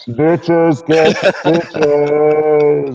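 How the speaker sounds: thunderous, booming godlike voice, stitches drawn out. Player explaining how a whispered line comes out, in a booming voice of God. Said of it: "it really comes out as like the voice of God".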